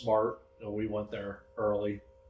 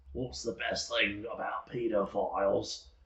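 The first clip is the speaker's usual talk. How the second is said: put-on Scottish accent. Retelling a joke told to a comedian, in the Scottish comedian's voice. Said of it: "I'm gonna say it in the uh, Scottish comedian's voice".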